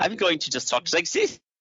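heavy put-on German accent. Mocking an actor's hammy movie accent: imitating Anthony Hopkins' fake German accent. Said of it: "his accent can only be described as German sausage".

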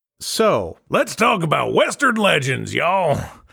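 slow, high-pitched put-on Western cowboy drawl. A host introduces the cowboy game western legends; put-on cowboy voice. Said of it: "I'm not going to do that voice the whole time".

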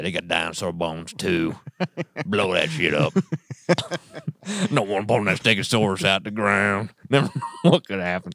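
voice dropped low, put-on. Joking with another speaker, doing Terry's voice, deeper.

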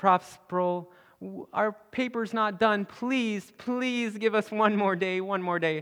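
tearful, pleading voice, begging through tears. Retelling how students begged the professor for more time: imitating tearful pleading. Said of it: "with tears in their eyes".

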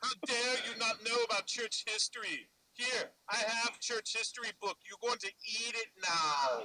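high, slow, stretched-out Austrian accent.

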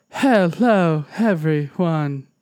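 calm, gentle put-on voice. Describing a game character's peaceful mode, mock-gentle peaceful voice. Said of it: "it has a voice when it's like all peaceful and nice".

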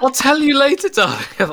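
high sweet voice.

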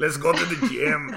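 very loud, belted, mixed European accent. Joking that mixed accents end up sounding like Arnold: Arnold voice. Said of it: "then he starts sounding like Arnold".

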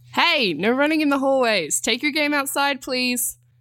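smiling yell. She calls after children running in the hallway, yelling with a smile. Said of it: "Danny yelled after them, but she couldn't hide the smile in her voice".

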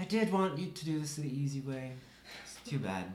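words breathed out on a sigh. Voicing a Dark Dweller who gives up on the easy way: sighing. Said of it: "just kind of sighs and says".

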